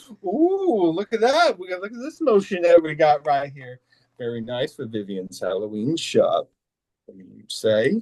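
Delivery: low, swooping, kooky maniacal character voice with laughing. Asked by the interviewer for an impression, doing a laughing impression of him. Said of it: "can you give us like a little impression of him".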